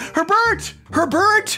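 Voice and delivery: shouting. Calling out for herbert, yelling. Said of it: "You're yelling too".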